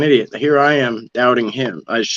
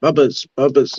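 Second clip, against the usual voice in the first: put-on little kid's baby voice; 3 semitones higher than usual. Speaker retells a young boy repeating a name, in a toddler baby voice. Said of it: "he had that baby voice still".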